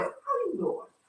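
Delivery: soft, hushed, breathy, whispery ladylike voice. Opening a morning radio show and greeting listeners, in her lady voice. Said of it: "In my lady voice".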